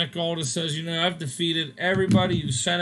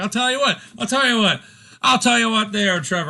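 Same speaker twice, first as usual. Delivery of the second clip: terrible put-on British accent, loud and high; 5 semitones higher, 6 dB louder than usual. Retelling what a man said to trevor while others laughed: bad british accent. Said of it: "I'm very terrible at a British accent".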